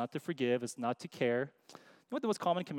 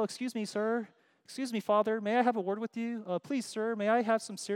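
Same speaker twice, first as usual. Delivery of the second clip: put-on overly polite child voice, higher; 8 semitones higher than usual. Showing how children do not talk to parents: imitating an overly polite child. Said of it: "It's not polite. They don't go".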